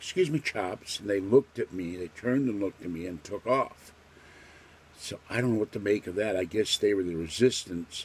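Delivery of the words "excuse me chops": put-on, pitched-up British accent. Retelling what they suddenly said to armed men running downstairs, British accent. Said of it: "I suddenly said in a British accent".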